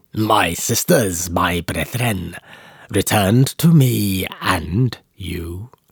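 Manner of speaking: slow, croaking voice, no longer human. Narrating a story, voicing the creature as it speaks, in a croaking inhuman voice. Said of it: "it croaks in a voice that is no longer human".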